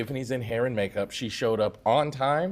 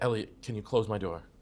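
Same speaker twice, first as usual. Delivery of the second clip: very calm, composed, even-toned delivery, acted; 3 semitones lower, 4 dB quieter than usual. Retelling what a woman asked him at her trailer door: imitating a calm request. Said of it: "very calmly".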